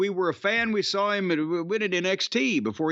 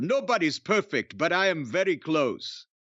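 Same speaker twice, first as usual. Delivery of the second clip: mock superior, condescending, talking-down delivery. Retelling a wrestler's promo from last week: imitating Gunther's condescending tone. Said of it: "he's such a condescending dick kinda heel".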